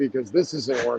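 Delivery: plain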